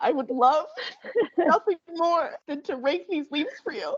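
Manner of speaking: mock near-tearful voice, pitched high. Retelling begging a man to let her rake his leaves, imitating her near-tearful self. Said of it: "I was on the verge of tears".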